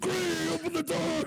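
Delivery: very high, urgent, high-pitched shout. Playing a character pounding on granny's door: urgent shouting in character.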